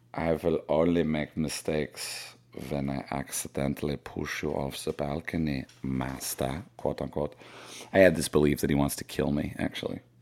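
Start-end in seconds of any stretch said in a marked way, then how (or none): 0.2-6.7 very slow, hushed, put-on German accent. The speaker gives Snowball a voice, German accent. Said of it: "Snowball has a German accent".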